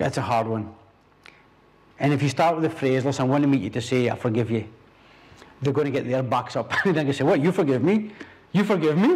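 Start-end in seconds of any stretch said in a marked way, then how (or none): 7.2-9.2 put-on Italian gangster accent. Acting out someone's reply to being told they're forgiven, Godfather-style Italian accent. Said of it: "I'm talking like an Italian".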